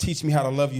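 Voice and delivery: ordinary talk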